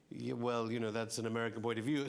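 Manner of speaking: ordinary talk, nothing marked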